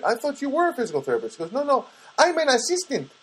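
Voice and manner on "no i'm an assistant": terrible put-on Filipino accent, slow and high. Retelling how Anna corrected the speaker about her job: Anna's Filipino accent. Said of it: "Trying to do the Filipino accent".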